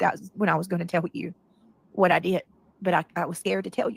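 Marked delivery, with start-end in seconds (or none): none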